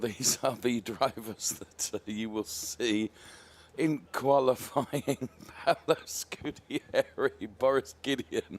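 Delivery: speech mixed with laughter. Introducing the drivers for qualifying, laughing while talking. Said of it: "sorry for my laughter".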